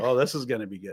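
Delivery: imitated laughing while talking. Retelling the father at breakfast, imitating him laughing while talking. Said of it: "and he really starts laughing".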